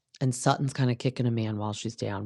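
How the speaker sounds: ordinary talk, nothing marked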